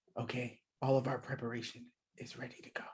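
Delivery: fast, hushed whisper.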